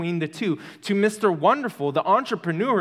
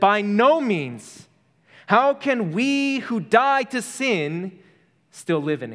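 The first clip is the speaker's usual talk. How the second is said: put-on raised voice, slow, every word pressed; 3 semitones higher than usual. Quoting Paul's words from verse 2, retelling with raised voice. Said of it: "Paul raises his voice".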